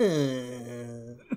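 soft, weird robotic whine. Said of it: "a weird whine to him".

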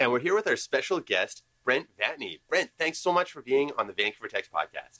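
put-on, exaggerated radio announcer voice. A podcast host jokingly welcomes the special guest, exaggerated radio announcer voice. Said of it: "I don't usually have like a radio voice".

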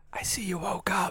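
soft unvoiced whisper. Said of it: "We're whispering".

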